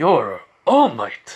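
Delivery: loud, booming, heroic delivery. Retelling a story in which a character speaks: All Might voice.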